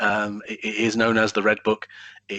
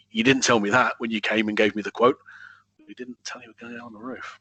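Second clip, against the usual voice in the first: mock can't-believe-it, incredulous tone. Retelling what a man who got a quote said about workers on his roof, retelling an incredulous voice. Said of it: "in a kind of a rather incredulous voice".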